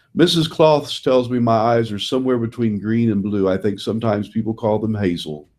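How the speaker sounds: usual speaking voice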